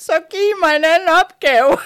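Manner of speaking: put-on loud sobbing. Speaker retells pleading with three angels in a church: retelling crying out loudly. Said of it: "grædende, højt ind i kirken".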